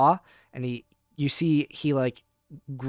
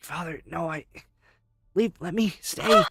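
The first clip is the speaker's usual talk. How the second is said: groggy semi-conscious muttering; 3 semitones higher than usual. Voicing the groggy lion lying in the dust: Cinder muttering semi-conscious. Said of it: "muttering something to himself as he's, like, kind of in a, like, a semi-conscious state".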